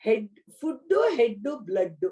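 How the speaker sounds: put-on very heavy, thick Telugu-accented English. Retell what Swami said to your sons about parents, in a very heavy Telugu accent. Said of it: "with a very heavy Telugu accent".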